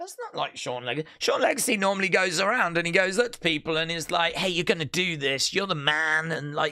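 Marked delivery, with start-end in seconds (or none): 4.3-6.3 put-on encouraging voice. Retelling how Sean Legacy goes up to people: imitating Sean Legacy being encouraging. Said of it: "is really encouraging".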